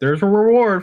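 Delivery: very high, loud, birdlike pigeon-like calling voice. A narrator voices a guardsman heard from outside, pigeon-like guardsman voice. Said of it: "that guardsman sounds a lot like a pigeon".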